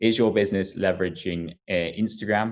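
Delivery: plain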